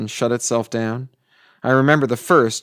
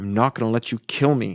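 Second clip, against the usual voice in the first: said through gritted, clenched teeth. A restrained man refusing to sign, answering the doctor, through clenched teeth. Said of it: "I said through clenched teeth".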